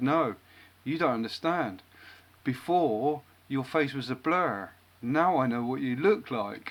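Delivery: quite stern, serious, firm delivery. Retelling a client's reply after a joke: imitating a stern reply. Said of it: "quite sternly".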